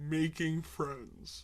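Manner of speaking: slowed down. Talking to viewers in a video, repeating two words, slower.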